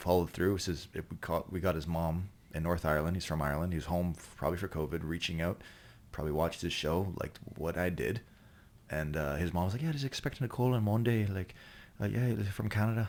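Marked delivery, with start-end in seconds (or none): 9.8-13.1 terrible, high-pitched put-on New Zealand accent. Retelling what someone's mother said about an expected call: bad New Zealand accent. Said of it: "That's the worst New Zealand accent I've ever heard".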